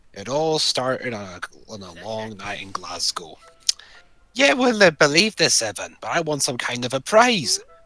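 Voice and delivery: low Scottish-accented character voice.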